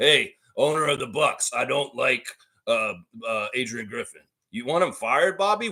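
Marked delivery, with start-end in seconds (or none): 0.0-4.2 halting, hemming and hawing delivery. Acting out a player asking the team owner to fire the coach: imitating Bobby Portis. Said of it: "old bug-eyed backup center Bobby Portis".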